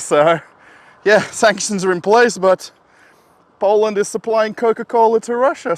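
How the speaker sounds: puffed out, broken-up words. Talking to the camera after climbing steps, out of breath. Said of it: "I'm a bit puffed out".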